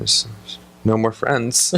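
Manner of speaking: put-on very sad voice. Retelling a sitcom scene where the character comes out super sad: imitating Motif sounding super sad. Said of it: "super sad".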